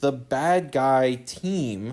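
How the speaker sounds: ironic air-quote inflection. Speaker describing a story's characters, saying the phrase with an ironic air-quote inflection. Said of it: "I keep saying it with that inflection".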